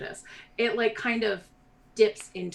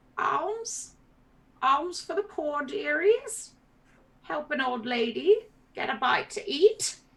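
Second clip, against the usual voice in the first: put-on high old peasant woman's voice, calling out; 8 semitones higher than usual. Narrator voices an old peasant woman calling out as the players approach: old peasant woman calling out. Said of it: "the woman calls out to you".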